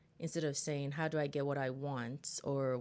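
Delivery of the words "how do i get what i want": ordinary talk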